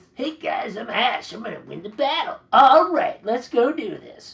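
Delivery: very loud, high-pitched chain-smoker voice. Speaker mimics how Ash sounded in this version, Ash as a crack-smoker voice. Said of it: "she sounded like a crack smoker".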